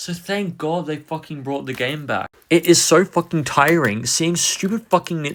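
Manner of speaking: fed-up, furious, angry swearing rant. A fan ranting to the audience, getting mad mid-sentence. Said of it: "I am getting mad here".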